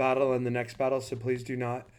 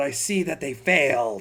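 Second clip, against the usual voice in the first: loud, screeching, female undead harpy shriek; 2 semitones higher, 6 dB louder than usual. Voicing an undead harpy screaming outside the tavern: shrieking female harpy voice. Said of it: "a loud shriek of a female voice outside as well, uh, that just screams out".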